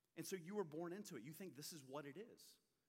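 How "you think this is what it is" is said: normal talking voice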